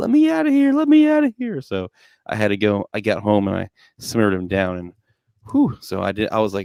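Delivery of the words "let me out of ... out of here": acted screaming little-kid voice, very high. Retelling a kid screaming at bedtime: imitating a child screaming. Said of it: "he was just screaming on the top of his lungs".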